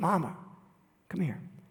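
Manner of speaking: soft, hushed, whispered voice. Retelling a sick son's words to his mother: imitating a whisper. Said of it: "he said to me in this whispered voice".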